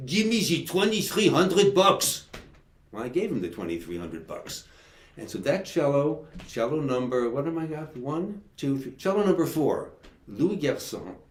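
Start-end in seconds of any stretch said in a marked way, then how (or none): 0.1-2.3 put-on loud, thick, heavy French accent. Retelling the cello seller's reply while bargaining, the speaker uses a heavy French accent. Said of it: "he said in his heavy French accent".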